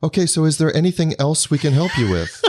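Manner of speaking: bright, high, chipper, scripted phone-rep voice. Complaining about a long hold call, mimicking a mock-chipper Verizon customer-service voice. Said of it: "that chipper voice at the end that says".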